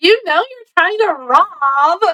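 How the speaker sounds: put-on, loud, high-pitched blurted exclamation. Retelling what a bank teller told a robber: imitating someone saying it really loud. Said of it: "she says it really loud".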